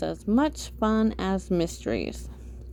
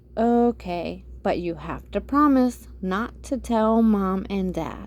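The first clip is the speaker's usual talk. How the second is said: ordinary delivery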